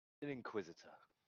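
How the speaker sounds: ominous, menacing, threatening delivery. Answering an NPC who asks what the character is: menacing tone. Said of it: "With a bit of a menacing tone".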